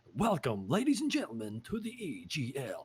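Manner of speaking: big, swooping sports announcer voice. Speaker describing how they sound on the mic, doing their commentator voice. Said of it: "I get my like my commentator voice".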